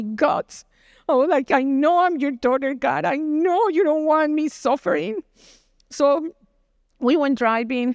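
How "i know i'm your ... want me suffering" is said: tearful, crying, weeping from the gut. Retelling what she said praying to God, re-enacting a tearful plea. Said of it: "that cry came from my stomach".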